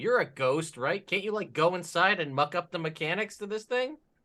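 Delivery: very loud, shrill, high calling-out shout. Calling out to another character during the scene: yelling out loud. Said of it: "I'm gonna yell out loud to Patricia".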